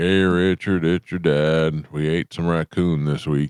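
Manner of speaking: slow, unhurried Kansas dad voice. Imitating a father from Kansas leaving a voicemail: imitating a Kansas dad's voice. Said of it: "they'll talk like that".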